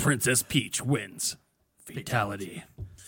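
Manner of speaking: fighting game announcer voice, low, slow, booming.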